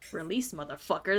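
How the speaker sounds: growled under breath. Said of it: "that's what I said".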